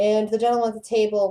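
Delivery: ordinary delivery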